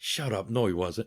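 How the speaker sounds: hushed speech in low tones. Retelling two men debating in low tones: retelling a hushed argument. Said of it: "talking in low tones".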